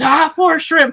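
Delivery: crowd yelling together. Retelling how a jujitsu class yelled a line from a viral video, imitating a crowd yelling. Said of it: "they're all yelling".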